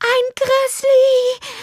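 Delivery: very high, quavering, trembling voice. Narrator reading the mother's words as she sits shaking on the bed, trembling voice. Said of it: "sagte sie mit zitternder Stimme".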